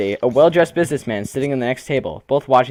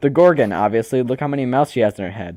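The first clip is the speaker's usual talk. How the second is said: ordinary delivery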